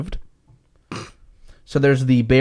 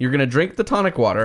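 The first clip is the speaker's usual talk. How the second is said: plain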